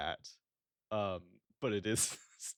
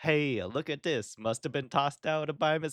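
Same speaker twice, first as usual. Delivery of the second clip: bad, pitched-up New York accent; 7 semitones higher than usual. Imitating a character who has only a couple of lines, bad new york accent. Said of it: "has a like New York City accent".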